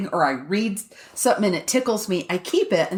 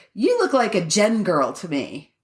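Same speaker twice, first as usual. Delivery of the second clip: plain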